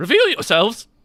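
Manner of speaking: shrill, very high, loud squeak. As the bard, calling out after the Ifrit draws his sword, squeaky voice. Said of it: "the bard sort of in a squeaky tone says".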